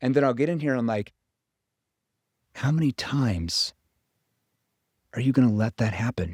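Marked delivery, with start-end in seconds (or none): 2.5-6.3 concerned tone, shifted lower. Demonstrating a challenging question, shifting down to a concerned tone. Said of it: "I'm shifting down to that concern tone".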